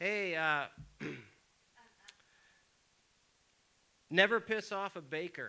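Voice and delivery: acted, mild, half-yelled, called-out voice. Retelling a parting remark to a police officer: imitating own past yell. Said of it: "So I yelled to him".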